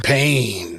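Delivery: action-movie tough guy voice, word stretched out. Saying a one-word line like Clubber Lang from Rocky. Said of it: "I said it like Clubber Lang from Rocky".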